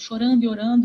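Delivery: ordinary delivery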